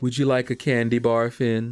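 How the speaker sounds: deliberately creepy put-on voice. Answering someone who asked why their hellos sound creepy, in a creepy voice. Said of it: "I'm trying to sound creepy".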